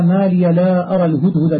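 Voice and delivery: ordinary talk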